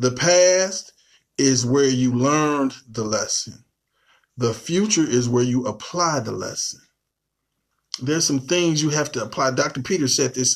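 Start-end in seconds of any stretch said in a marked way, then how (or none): 0.0-6.8 slow, deliberate repeat. Teaching listeners, repeating a quote for them, saying it slowly again. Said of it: "I'm going to say that again".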